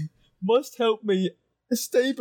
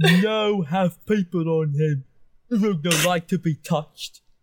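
deep, slow, lumbering ogre voice, broken simple speech; 4 semitones lower than usual. In a role-playing game, playing the ogre Uru: Uru ogre voice. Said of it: "It's an ogre. ... And he smells really bad".

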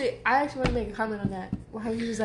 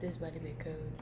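very quiet, low, hushed half-whisper; 5 semitones lower, 13 dB quieter than usual. Retelling what he said when they first got the call, retold half-whisper. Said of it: "he whispered".

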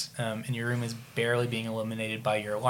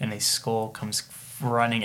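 normal talking voice

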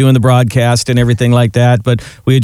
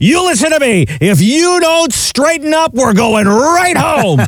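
shrill, very high yelling; 14 semitones higher than usual. Describing a man scolding a misbehaving kid, retelling a yell. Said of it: "he's yelling at him".

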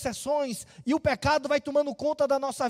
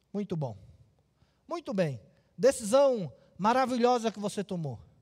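mock ironic, sarcastic, sing-song praise; 5 semitones lower than usual. The speaker retells Jesus's words to a wrongdoer, retelling an ironic remark. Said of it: "Jesus faz ironicamente".

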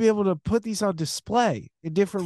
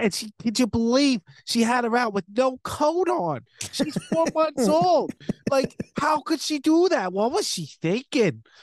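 put-on North Jersey accent and speech pattern; 4 semitones higher than usual. Showing off a new bit of talking in a North Jersey accent. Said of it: "doing like a Jersey accent, like North Jersey".

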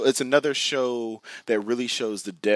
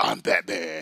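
really rough, hard-rasping put-on voice; 4 semitones lower than usual. Comparing another character to Batman: raspy Batman voice. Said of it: "that really raspy voice".

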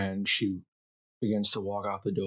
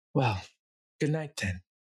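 pitched-up, higher voice; 5 semitones higher than usual. The narrator voices a woman bidding the player good night, with a slight grin. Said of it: "with this very slight grin".

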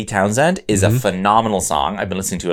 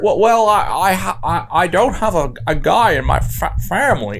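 very high, slow, halting, stammering, badly done put-on voice; 10 semitones higher than usual. Doing Jimmy Stewart on Family Guy: terrible Jimmy Stewart voice. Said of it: "it's terrible".

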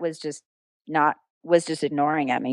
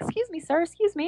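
put-on girly voice, higher and quieter; 13 semitones higher, 7 dB quieter than usual. Retelling asking a man to leave the pitch: imitating own little girly voice. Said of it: "get as little girly as possible".

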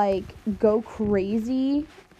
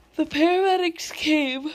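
talking through a high yawn, words stretched; 6 semitones higher than usual. Recounting a medical emergency story, yawning mid-sentence. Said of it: "Sorry, I'm yawning".

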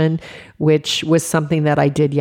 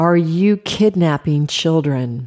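put-on hostile, accusing scream, violent and loud; 2 semitones higher than usual. Retelling a stranger shouting from her car window: imitating a woman screaming. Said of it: "she screamed at me".

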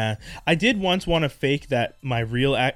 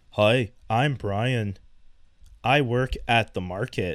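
very slow, drawn-out American accent; 2 semitones lower than usual. Asked to do an american accent, making fun: american accent. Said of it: "when someone wants me to do an American accent".

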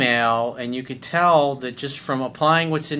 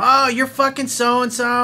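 acted, very high, shrill yelling; 11 semitones higher, 4 dB louder than usual. Retelling a woman at a grocery store cussing at her boyfriend, imitating a woman yelling. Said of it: "she's like yelling at him".

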